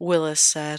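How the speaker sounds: ordinary delivery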